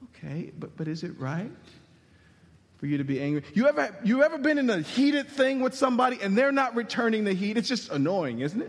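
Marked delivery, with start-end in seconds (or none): 0.0-3.4 gentle, unheated, low, calm, soothing voice. Recreating a scene with God answering an angry Jonah, God in a soothing voice. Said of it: "I hear God in a soothing voice".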